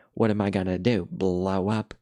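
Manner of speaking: put-on slow, jeering, scornful, mocking tone. Retelling a cartoon scene where one character taunts another: retelling a mocking retort. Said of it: "he's mocking him and he's like".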